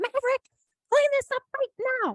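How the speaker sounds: shrill, very high, bossy, barking delivery. Parent imitates older son barking orders at his little brother, imitating Everett's shrill order. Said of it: "barking orders at his little brother in this really shrill voice".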